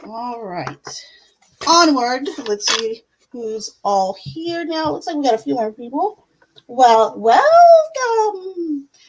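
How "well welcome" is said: high, swooping, spooky, creepy witch voice. A host welcomes newly arrived people in a creepy witch voice. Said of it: "Do I sound like a creepy witch?".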